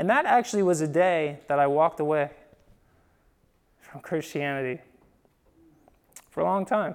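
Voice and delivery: soft voice with emotion welling up. Recalling walking away from christianity as a twelve-year-old, getting emotional. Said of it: "I'm getting emotional about it".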